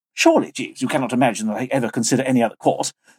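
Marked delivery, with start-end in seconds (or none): none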